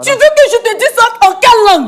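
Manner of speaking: heated, angry, agitated, worked-up outburst. Confronting a man about a child while told to calm down: angry, agitated outburst. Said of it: "Madame, madame, s'il vous plaît, rassurez-vous".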